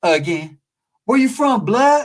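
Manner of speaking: slow, challenging Oakland street voice. Showing how gang members from Oakland talk: imitating Oakland norteño talk. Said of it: "norteños from Oakland be like this".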